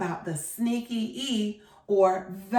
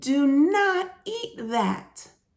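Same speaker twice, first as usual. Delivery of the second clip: very slow, drawn-out, excited voice; 4 semitones higher than usual. Reading a line from a book aloud to listeners, as an excited exclamation. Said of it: "I'm saying it with excitement in my voice".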